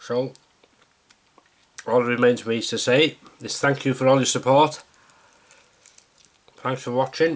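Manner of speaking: speaking with a full mouth. Closing a greenhouse vlog and thanking viewers, talking with a mouthful. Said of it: "Excuse me talking with a mouthful".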